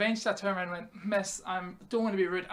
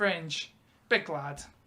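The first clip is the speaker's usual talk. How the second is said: ordinary talk, nothing marked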